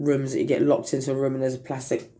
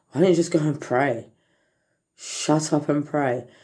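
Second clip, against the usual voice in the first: ordinary delivery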